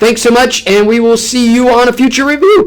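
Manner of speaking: voice breaking, cracking and jumping high. Signing off a review video, thanking viewers: voice cracking. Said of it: "Voice crack".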